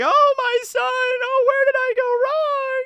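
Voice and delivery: very high, tearful, crying wail. Retelling a story where a crying mother laments her son: imitating a crying mother. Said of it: "his mom is in there crying".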